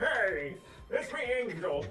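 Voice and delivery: put-on Irish accent. Speaker teased about the Irish thing, imitating Angel, Irish accent. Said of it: "What is it with you and this Irish thing?".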